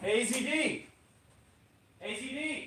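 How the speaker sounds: high-pitched yell. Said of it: "let me yell down to him".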